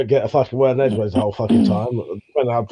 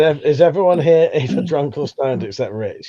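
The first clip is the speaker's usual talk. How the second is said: ordinary talk, nothing marked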